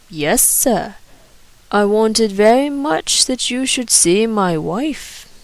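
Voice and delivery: slow, careful, measured non-native English, word by word. Visitor from Asia Minor answering Douglas Stone's question, speaking English slowly. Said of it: "I am here from Asia Minor, / A few moments later the butler swung open the door and ushered in a small and decrepit man, who walked with a bent back and with the forward push of the face and blink of".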